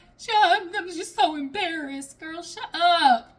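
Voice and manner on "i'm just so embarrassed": put-on fake crying. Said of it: "this fake ass crying".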